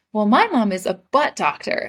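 acted, eager, boastful, proud, excited voice. Retelling what they said as a kid on the school bus: retelling saying it proudly. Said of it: "And I said really proudly".

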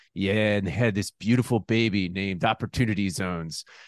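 low, dull, level droning monotone. Retelling a conversation, the speaker imitates a man's reply in a droning voice. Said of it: "he had this like this droning voice".

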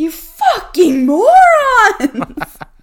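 very loud, very high, shrill furious scream. Imagining a listener banging the steering wheel and screaming at the hosts: mock-furious scream. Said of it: "someone listening to this just screaming at us".

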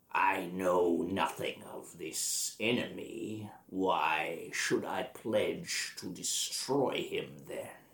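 menacing, scary undead lich voice. A game master voices a lich answering the players: scary lich voice. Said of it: "it's a lich. ... But he's still scary as hell".

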